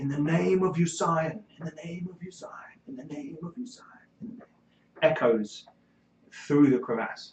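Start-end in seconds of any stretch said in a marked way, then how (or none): 0.0-4.4 woman's voice calling out, high-pitched. Game master voices an echoing voice from within a crevasse, female voice calling out. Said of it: "a female voice calls out".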